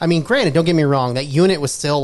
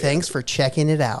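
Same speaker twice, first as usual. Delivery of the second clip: flat, emotionless put-on voice; 4 dB quieter than usual. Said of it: "no emotion, no anything".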